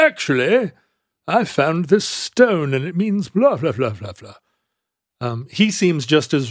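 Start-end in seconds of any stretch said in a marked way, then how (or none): 0.0-4.3 put-on British-accented voice. Imitating some guy from the historic record: British accent. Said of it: "some guy with a British accent is like".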